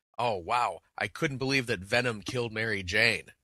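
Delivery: play-acted, very loud, booming, carrying voice. Retelling walking past a crowd waiting for the next show: a very loud remark. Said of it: "I say in a very loud voice".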